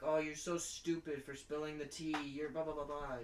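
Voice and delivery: loud, angry, scolding yell. Imagining a mom scolding a girl over spilled tea: imitating a mom yelling. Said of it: "the mom's yelling at me".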